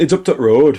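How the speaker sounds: bad Yorkshire accent impression. Imitating locals giving directions: bad Barnsley accent. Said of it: "I'm probably killing that accent there really badly".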